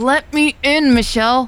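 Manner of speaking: high, impatient yell, losing patience. Elle, kept waiting outside, calls to Michelle with an impatient yell. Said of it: "Elle yelled, growing impatient".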